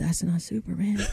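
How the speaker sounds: soft muttered aside under the breath. Retelling what a teacher said about a student, retelling a mutter under her breath. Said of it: "under her breath".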